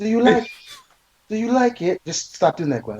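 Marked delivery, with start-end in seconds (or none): 0.0-2.0 fake English accent, much higher and slower. Mocking Gwen for suddenly switching accents, the speaker does Gwen's put-on English accent. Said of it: "starts speaking that English accent she used".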